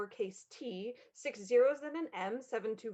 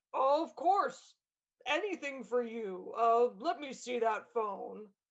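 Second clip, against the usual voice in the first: put-on deep voice. On the phone to Strawberry Cell, pretending to be his father: fake deep voice as Dad. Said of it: "[in deep voice]".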